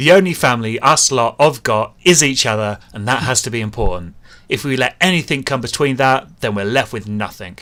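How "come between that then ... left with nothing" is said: plain reading voice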